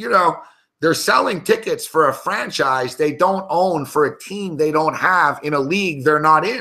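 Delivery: plain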